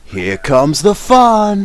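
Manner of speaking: huge, very loud, very high booming yell. A player voices their character's first spoken line in the game: huge booming scream. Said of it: "a huge booming voice, as loud as I possibly possibly can. I just scream out".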